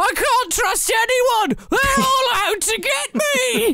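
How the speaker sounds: put-on high, slow scream in a Cockney accent. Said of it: "screaming in a Cockney accent".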